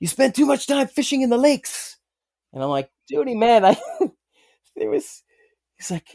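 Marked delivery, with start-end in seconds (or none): 0.0-2.0 fired-up, very high-pitched, fast screamed yelling. Retelling how an intense man on a fishing trip screamed at him, imitating someone screaming. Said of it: "He's screaming at me".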